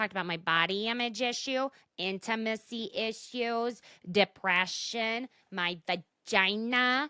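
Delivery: very slow put-on voice, lingering on 'vagina'. Telling Ariana what she has talked about, in a Teresa Giudice voice. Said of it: "I'm doing the Teresa Giudice voice".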